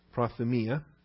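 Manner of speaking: prothumia with the stress on mi. Pronouncing the greek word prothumia, accent on the iota: stress on the mi syllable. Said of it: "I like to pronounce my omicrons with a short O sound. Accent is on the iota".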